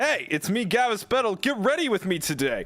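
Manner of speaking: uncanny, inaccurate ai voice clone. Imagining a video playing at a funeral: uncanny inaccurate AI voice. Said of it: "uncanny, a-, inaccurate, like, A I Gavis Battle voice".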